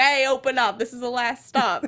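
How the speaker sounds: bad, heavy put-on mash-up of Australian and Jersey. Recounting a train conductor character the speakers love, bad heavy Australian-Jersey accent. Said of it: "with like the really heavy accents that's just like".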